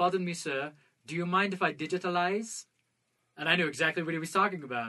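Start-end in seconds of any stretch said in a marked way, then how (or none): 0.0-2.6 put-on, gentlemanly South African accent. Retelling what a surgeon from South Africa said: imitating a South African accent. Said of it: "this really great accent to him".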